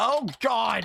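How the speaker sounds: shouting. Reacting to something inside the room: yelling. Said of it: "why I'm yelling".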